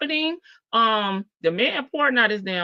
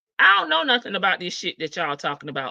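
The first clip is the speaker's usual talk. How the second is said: usual speaking voice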